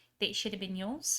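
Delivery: whispering in character. Whispering an aside to Snick in character: whispering in character. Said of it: "I whisper to Snick".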